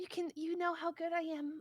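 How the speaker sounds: put-on soft, gentle, high feminine voice. Quoting what she said while discussing her with a friend; soft gentle female voice. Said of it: "gentle female voice".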